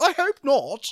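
put-on very high working-class accent. Retelling Fraser's reply to Haley, in Fraser's real working-class accent. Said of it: "there's Fraser's real accent, his real working class accent".

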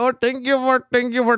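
put-on Indian accent. Calling a radio station and answering in English, put-on Indian accent. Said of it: "me puse a hacer la voz de hindú".

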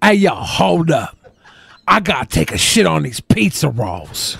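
cool-dude persona voice. After doing a voice for the woman, voicing the guy in a put-on cool guy voice. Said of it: "That's my cool guy voice".

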